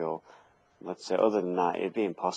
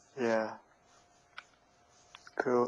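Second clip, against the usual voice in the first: talking through a yawn, higher and quieter; 5 semitones higher, 3 dB quieter than usual. Responding in a chat about RPG character builds, yawning while speaking. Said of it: "Sorry, I'm yawning".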